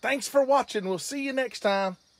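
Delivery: very high, loud, energetic, pumped-up delivery. Coaching someone to sign off a video and showing how: loud and energetic. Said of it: "let's say it with more energy".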